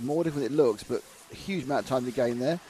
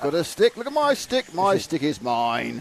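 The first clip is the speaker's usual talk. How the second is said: loud, talking-dog character voice; 3 semitones higher, 5 dB louder than usual. Commentating on a dog with a stick, voicing the dog in a dog voice. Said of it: "I'm doing all my dog voices in English".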